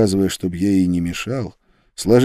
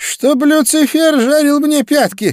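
very high, wailing outcry; 4 dB louder than usual. A preacher who cannot see his companions cries out to them; crying out. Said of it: "возопил проповедник".

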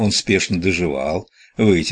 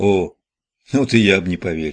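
ordinary delivery

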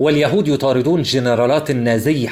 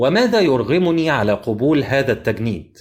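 plain reading voice

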